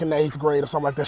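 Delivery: rushed, fast-paced speech.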